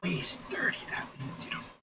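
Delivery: whispered aside.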